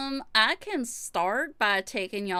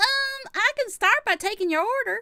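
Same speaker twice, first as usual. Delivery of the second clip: drawling Southern accent, very high pitch; 10 semitones higher, 4 dB louder than usual. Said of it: "I love the southern drawl".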